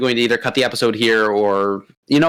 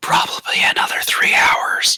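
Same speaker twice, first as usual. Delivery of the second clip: hushed, breathy whisper. Voicing a character answering a message from inside a meeting: whispering reply. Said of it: "all you just hear is a whisper back".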